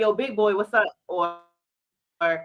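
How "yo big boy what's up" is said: plain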